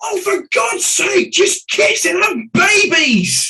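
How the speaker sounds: very high, drawn-out, exasperated, fed-up outburst. Speaker recalls a kid in the back row losing patience; retelling a kid's yell. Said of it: "yelled at the top of his voice".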